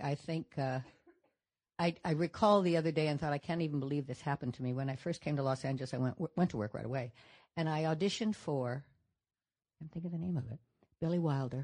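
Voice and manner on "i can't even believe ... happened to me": ordinary talk, nothing marked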